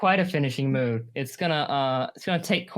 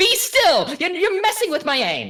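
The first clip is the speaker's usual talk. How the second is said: very high, swooping, shrill, loud yell; 5 dB louder than usual. Voicing Sturgeon during the fight: yelling Sturgeon's line.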